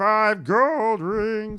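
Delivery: very high-pitched cartoon frog puppet voice. Attempting Miss Piggy's line, a speaker ends up in a Kermit-like puppet voice. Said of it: "that's more Kermity".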